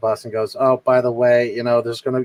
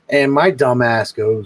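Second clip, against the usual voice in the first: plain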